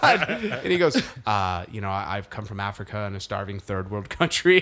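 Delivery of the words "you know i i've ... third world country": deadpan, dead-serious, matter-of-fact delivery. Retelling a comedy bit from a show: Liam Neeson deadpan delivery. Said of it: "in that very Liam Neeson way".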